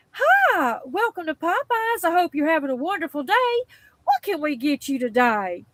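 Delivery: put-on mock-sweet voice. Retelling the greeting at the Lucedale Popeyes drive-through: imitating a sweet drive-through worker. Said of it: "It was really sweet".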